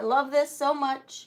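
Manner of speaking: plain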